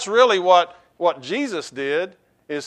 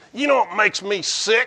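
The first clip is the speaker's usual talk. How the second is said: put-on grumpy, grousing old country man voice; 2 semitones higher, 3 dB quieter than usual. Show how he always starts his program, as an Earl Pitts impersonation, grumpy old redneck. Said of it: "That's my Earl Pitts impersonation".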